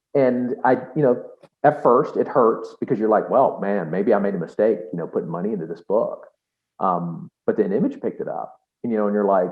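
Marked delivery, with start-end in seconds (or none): none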